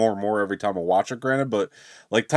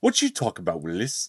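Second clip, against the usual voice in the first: put-on Australian accent; 4 dB quieter than usual. Recalling a favourite Free Guy moment, quoting the character's put-on movie accent. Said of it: "It's his accent that he puts on".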